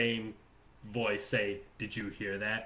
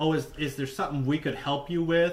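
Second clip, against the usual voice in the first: play-acted sarcastic, falsely helpful, pitched-up tone; 5 semitones higher, 3 dB quieter than usual. Retelling what another speaker asked the spirit: imitating Chrissy asking sarcastically.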